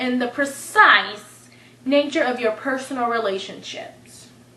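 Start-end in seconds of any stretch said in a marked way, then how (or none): none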